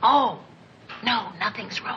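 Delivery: soft, hushed whisper kept low. [name] answers so as not to wake Joe, whispering. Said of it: "you don't have to whisper".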